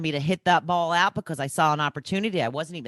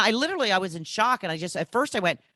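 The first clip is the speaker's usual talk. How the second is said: normal talking voice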